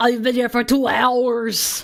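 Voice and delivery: bad Austrian accent with "hours" drawn out. Repeating someone's line about being here two hours: bad Arnold Schwarzenegger impression. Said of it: "Her inner Arnold came out. ... That was a really bad impression".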